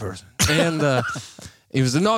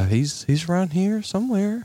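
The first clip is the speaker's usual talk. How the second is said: put-on high female voice, country accent; 4 semitones higher than usual. Retelling her answer to a man's question, in a high-pitched female country voice. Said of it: "I try to do it like a female voice, and we're a little high pitched, and but it's really country accent".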